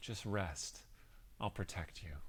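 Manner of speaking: soft, silky, soothing, hushed whisper. Narrating a memory to a player, voicing Lilson in a silky soothing voice. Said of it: "This silky soothing voice that says".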